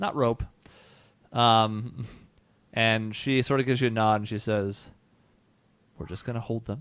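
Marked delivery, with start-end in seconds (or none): 6.0-6.8 soft, hushed half-whisper. Voicing a character who quietly explains holding captives: half-whispering. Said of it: "And she's whispering this".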